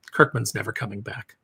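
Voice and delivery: play-acted very soft, low, defeated, deflated murmur. Retelling Jason's reaction when someone he wanted to talk to walks off, imitating Jason deflated. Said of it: "Jason just immediately deflates and goes".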